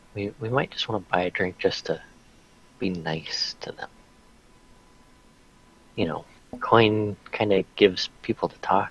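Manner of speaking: hushed whisper. Player speaking in character, leaning in close to another character: whispering. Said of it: "I would be whispering like literally in Marsh's ear".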